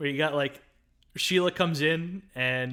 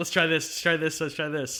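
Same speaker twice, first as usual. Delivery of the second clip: plain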